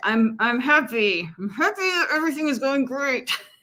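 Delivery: talking through clenched jaw. Showing someone pretending to be happy: imitating saying it through a clenched jaw. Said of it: "clenching your jaw and saying".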